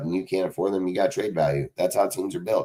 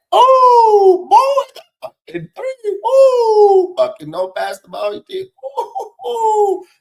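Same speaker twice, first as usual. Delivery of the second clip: put-on shrill, booming, very loud, high, very slow mocking; 11 dB louder than usual. Retelling a movie scene where the coach mocks a ball hog: imitating someone mocking a player. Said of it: "starts clowning this dude".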